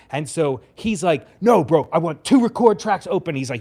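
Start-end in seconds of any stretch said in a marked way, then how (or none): 1.4-3.3 high yell through a microphone. Retelling how the artist yelled through the microphone: imitating someone yelling. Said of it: "yelling at me through the microphone".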